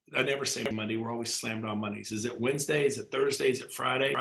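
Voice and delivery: plain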